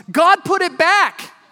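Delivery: very high, drawn-out, all-out shout at full lungs. Retelling how he shouted on seeing the scrape again: imitating a shout at top of lungs. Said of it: "shouted again at the top of his lungs".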